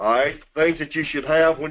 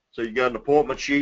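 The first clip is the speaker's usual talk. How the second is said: ordinary talk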